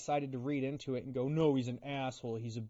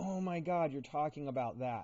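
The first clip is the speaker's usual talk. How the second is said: put-on sheepish, a little embarrassed. Acting out how the bride reacts to the vows: imitating an embarrassed bride.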